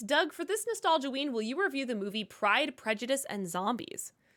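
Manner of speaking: ordinary delivery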